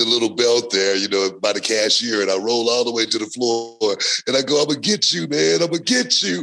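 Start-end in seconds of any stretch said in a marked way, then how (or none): 4.6-6.4 put-on high, tearful, sobbing crying voice. Retelling own line while rolling to the floor: imitating own crying. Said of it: "And I'm crying when I say it".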